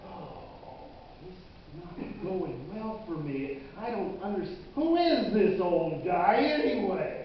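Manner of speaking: ordinary talk, nothing marked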